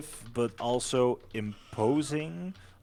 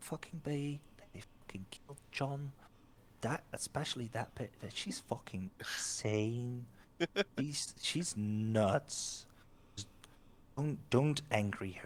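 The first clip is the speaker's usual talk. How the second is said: hushed, quiet muttering; 8 dB quieter than usual. Retelling what people around were saying, hushed voices. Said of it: "just you hear like hushed voices like".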